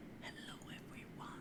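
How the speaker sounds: very soft whisper, barely audible.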